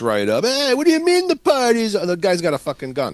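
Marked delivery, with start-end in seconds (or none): 0.4-1.9 very high, yelping scream voice. Retelling a movie scene where a drunk man walks in: Jim Belushi scream voice. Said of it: "he's in that scream voice of his".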